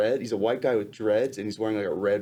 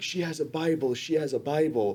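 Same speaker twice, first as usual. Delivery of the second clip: put-on shouting, pitched much higher; 6 semitones higher than usual. Describing a scene, the speaker acts out guards shouting: imitating guards yelling. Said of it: "they're yelling like".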